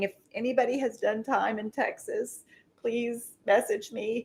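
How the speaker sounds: mock weepy, tearful, speaking through sobs. Retelling a young woman's TikTok video: imitating someone crying.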